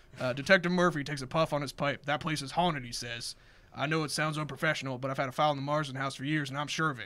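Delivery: ordinary delivery, nothing marked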